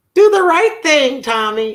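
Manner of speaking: voice pitched very high. Recalling what their mother always used to say, imitating mother's voice. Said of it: "I said I wasn't going to do that voice on here".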